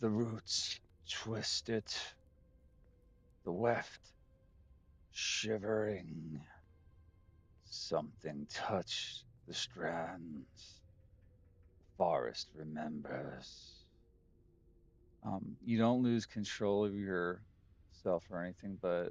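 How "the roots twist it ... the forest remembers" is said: soft, breathy whisper. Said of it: "I am being whispered to".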